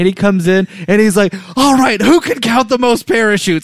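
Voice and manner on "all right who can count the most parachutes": put-on yelling voice, higher. Retelling how Rabbit came out to the kids: imitating Rabbit yelling. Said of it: "he's just yelling at these kids".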